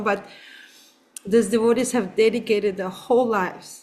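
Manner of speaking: earnest, slightly emotional voice touched with feeling. In a conversation about a man going into long-term care, getting a little emotional. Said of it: "I'm sorry if I'm getting a little emotional".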